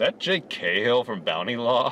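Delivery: ordinary talk, nothing marked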